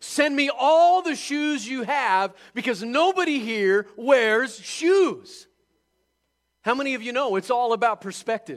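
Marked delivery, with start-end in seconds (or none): 0.0-5.5 loud, high, overflowing and bursting with enthusiastic excitement. Telling a story, the second salesman calls his manager, acting out bursting enthusiasm. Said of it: "Bursting with enthusiasm".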